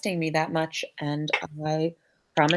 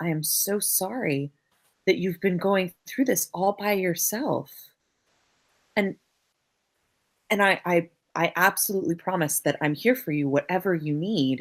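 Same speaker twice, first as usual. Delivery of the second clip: wholly sincere, heartfelt, earnest delivery. Speaking in character, holding another character's hands and looking at her face: earnest. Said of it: "she looks you earnestly in the face and says".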